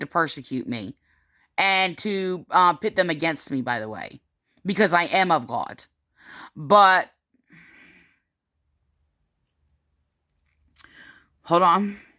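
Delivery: holding back tears. Speaking about their own children and family, holding back tears. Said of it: "So I'm trying not to cry".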